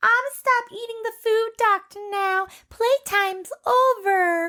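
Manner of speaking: put-on very high, slow, cutesy baby talk. Quoting what she said: imitating someone in a baby voice. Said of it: "Knock that baby voice off".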